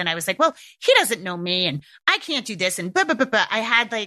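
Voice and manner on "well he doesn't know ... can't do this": bitchy, snippy voice with attitude. Retelling own past complaint about the challenge: imitating own past bitchy voice. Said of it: "that sort of, like, bitchy voice".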